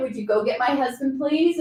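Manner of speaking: loud shouting, calling out. Recounting a tense moment, you call out to your assistant to fetch your husband, yelling. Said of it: "I just was calm and I just gently said".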